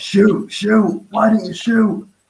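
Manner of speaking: acted screaming. Recalling a player failing to shoot, retelling screaming at the TV. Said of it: "just screaming at the TV like I was".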